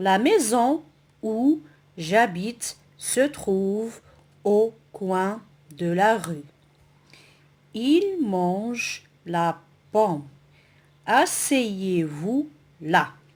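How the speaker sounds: slow, careful reading aloud. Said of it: "on va lire le corpus".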